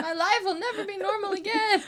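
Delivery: mock frantic, overwhelmed freak-out, very high and loud. Retelling how they react to a busy life: imitating own overwhelmed freak-out. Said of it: "just freak out and get overwhelmed".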